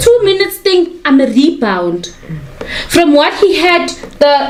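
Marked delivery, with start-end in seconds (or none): none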